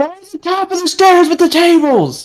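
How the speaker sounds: very high, loud shout. In the game, running down the stairs, the character calls out, shouting. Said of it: "I'm shouting".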